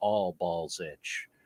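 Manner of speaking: very low, soft, dead-straight deadpan. Retelling how a man answered a woman's question, retelling a deadpan reply. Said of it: "he just looks at her very deadpan and says".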